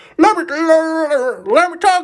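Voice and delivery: shrill, drawn-out speech while chewing, "let" stretched out. Imagining how she would conduct it, in a shack lady voice while chewing food. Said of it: "in the voice of the shack lady whilst chewing on some food".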